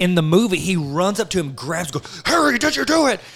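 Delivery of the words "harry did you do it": overacted, hammy, very high, loud outburst. Retelling the movie scene where Dumbledore runs up to Harry: imitating overacting Dumbledore. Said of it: "overacting like he's trying to win an Academy Award".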